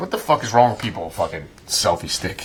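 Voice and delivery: quiet mutter off to the side. Retelling the end of the clip, said on the side: imitating Morgan Freeman muttering aside. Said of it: "he's like".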